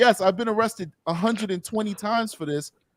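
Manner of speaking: play-acted very high-pitched, shameless, boastful thief voice. Retelling thieves giving interviews outside a store: imitating a shameless thief. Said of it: "giving an interview like".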